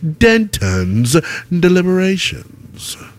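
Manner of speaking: cool-sounding voice. Introducing the producer's new segment title, in a cool voice. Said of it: "I have to say it in this cool voice".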